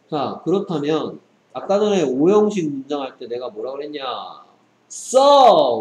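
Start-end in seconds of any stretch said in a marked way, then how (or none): 4.9-5.8 the word "so" shouted loud and high. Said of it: "라고 외쳤죠".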